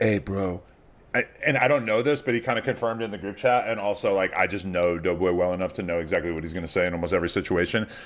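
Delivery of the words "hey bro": mock whispering. Retelling someone whispering into another's ear after a cake hit: imitating Doughboy whispering. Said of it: "puts his head down by his ear and whispers".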